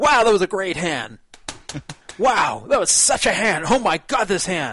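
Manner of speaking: very loud, triumphant, jubilant whooping. Retelling a man pounding the table after winning a big pot, imitating loud celebrating. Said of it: "pounding his fist on the table in celebration like this".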